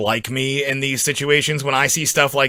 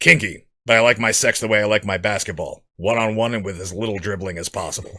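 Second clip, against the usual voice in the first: low, dead-flat, utterly straight deadpan; 5 semitones lower, 3 dB quieter than usual. Quoting a Naked Gun line: deadpan Leslie Nielsen impression. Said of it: "the silliest things in the deadest voice".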